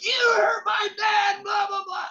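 mock very high, loud, wasted, drunken screaming. Retelling a drunk man shouting at people he invited, imitating a drunken scream. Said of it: "totally shit-faced and like screaming at these people".

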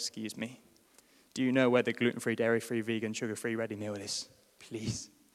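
small, low, meek, defeated, bedraggled voice. The speaker acts out asking a shop attendant for help, acting out a small voice. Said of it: "low with my head to the ground in a small voice".

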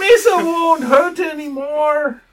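very high, very loud, shrill, pleading sobbing. Speaking as Misa in a role-play scene, weeping while pleading. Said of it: "And he starts like weeping".

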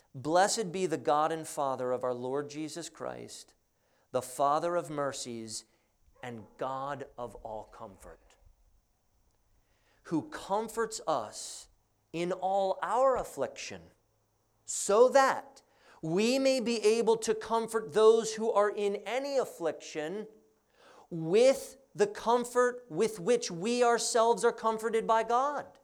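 slow, measured, careful, deliberate reading aloud. Reading a bible passage aloud to parents so they get it, reading slowly. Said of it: "I'll read it slowly so that you get it".

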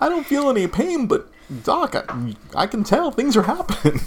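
rising, nervous laughing voice.

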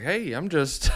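put-on chummy old grandpa voice. Imitating o.j. chiming in with his two cents: imitating o.j. as a grandpa. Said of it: "like he's, like, someone's grandpa".

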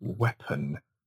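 low, soft, sinister narrator voice. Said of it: "I like the way he says".

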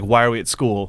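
ordinary talk, nothing marked

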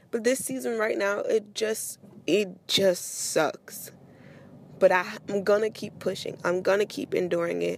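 pushing through, fighting to hold back tears. Speaker talking about a hard season they are going through, holding back tears. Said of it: "I'm really trying not to cry".

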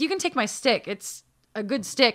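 ordinary talk

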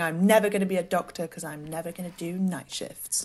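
put-on smug, self-satisfied, gloating little-kid voice. Recalling a childhood memory of talking to mum in bed, imitating own smug younger self. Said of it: "very smugly saying".

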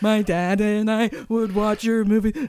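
play-acted, loud, hard sobbing through words. Retelling what they told her after walking up to her: imitating themself crying hard. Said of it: "Like so crying so hard".

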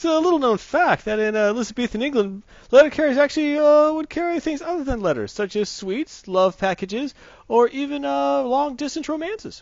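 put-on Boston accent. Speaker delivers a bit in the promised accent, terrible Cliff Clavin Boston accent. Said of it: "Terrible Cliff".

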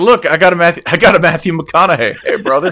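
cheery, chummy bear voice. Imagining what a bear fishing in Hawaii would say: voicing a happy bear. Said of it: "They'd be like".

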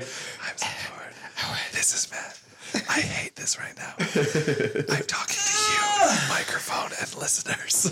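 soft whisper close to the mic. Speaker jokes about editing in clips of Matt, imitating Matt whispering. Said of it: "take out clips of Matt whispering".

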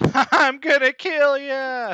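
shrill, very high, very loud charging war cry. Charging on a robot dog in a fight: screaming battle cry. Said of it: "Flip screams".

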